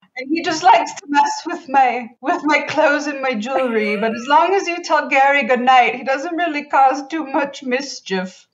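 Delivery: put-on high, loud mid-Atlantic mid-century accent. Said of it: "mid-Atlantic, mid-century accent thing".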